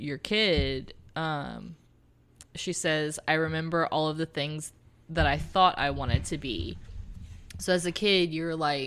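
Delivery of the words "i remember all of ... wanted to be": normal talking voice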